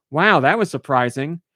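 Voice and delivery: normal talking voice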